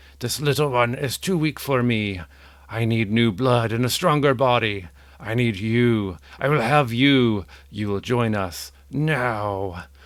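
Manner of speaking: loud, wailing demonic voice. Narrator voices a demon rising from your brother's body; wailing demonic voice. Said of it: "begins wailing these foreboding words".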